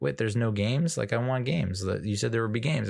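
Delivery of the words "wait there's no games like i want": ordinary delivery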